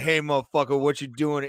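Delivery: calm, quiet, scary, menacing delivery. Imagining a fighter confronting a carjacker: calm scary Derek Lewis voice. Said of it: "in that scary Derek Lewis voice, just calm".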